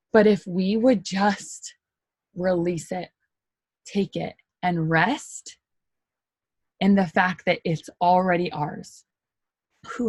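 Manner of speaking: choked-up, emotional voice catching with feeling. Speaking to listeners about faith, the speaker is choked up. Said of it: "I'm kind of getting choked up".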